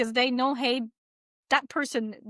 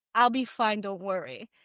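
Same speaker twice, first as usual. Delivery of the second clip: put-on whisper; 3 semitones lower than usual. Retelling a voice heard in bed after a friend died: retelling a whisper. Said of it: "I heard his voice in my ear just whispering".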